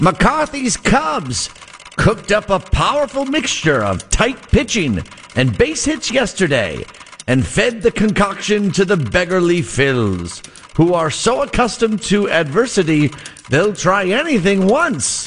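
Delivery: put-on old-timey radio announcer voice, vintage broadcast delivery. Reading a Cubs game report from a century ago, old-timey radio voice. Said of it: "I'm going to put in my old-timey radio voice".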